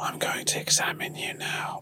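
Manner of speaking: mock soft whisper. Retelling an asmr video pretending to be doctors: imitating own asmr whisper. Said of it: "insisted on whispering".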